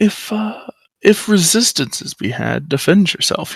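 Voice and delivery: conspiratorial stage whisper. Retelling what someone said after looking around, in a hushed voice. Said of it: "in a hushed voice goes".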